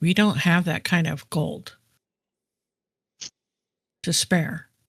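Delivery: whispered aside. A player character turns around to the others at a donation box; whispering to the others. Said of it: "I'm gonna turn around and whisper to the guys".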